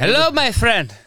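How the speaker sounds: accent from the Middle East. Trading accent impressions in conversation, doing a Middle Eastern accent. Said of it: "Middle East".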